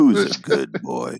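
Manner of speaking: very deep, low, sultry, sensual voice. Told to say the line with the deep sensual voice, a speaker tries it, deep sensual voice. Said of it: "You got to say it with the deep, sensual voice".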